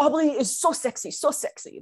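exaggerated caricature cartoon French accent. Describing a man who was a joke of a Frenchman: imitating a caricature Frenchman. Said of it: "He was like a joke of a French man".

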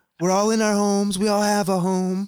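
loud high intonation. Reading out stay-at-home advice: Trump impression. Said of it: "that doesn't sound like Trump".

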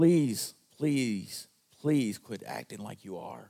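mock pleading voice. Speaking as god might to the listeners, acting out a plea. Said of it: "I think sometimes God wants to plead with you".

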